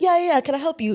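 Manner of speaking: imitated London accent. Retelling a guy's reply when approached, in a put-on London accent. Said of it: "He put on a London accent".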